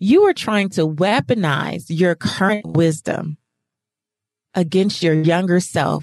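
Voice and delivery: put-on voice, disgusted and scolding, dripping with disgust. Recounting asking a woman for a forgiveness exercise, the speaker quotes her reply, imitating a disgusted voice. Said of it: "the disgust in her voice when she said".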